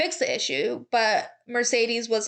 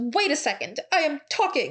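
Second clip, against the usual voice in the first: put-on speaking in a German accent; 4 semitones higher than usual. Retelling Toto's reply after Mattia tried to interrupt him, Toto German-accent impression. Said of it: "sounds slightly more alarming in a German accent".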